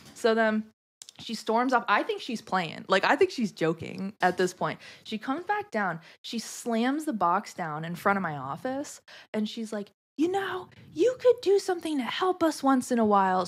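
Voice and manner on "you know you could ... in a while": put-on high screaming, complaining tone. Retelling a coworker slamming a box down, imitating her screaming. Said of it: "screaming at me".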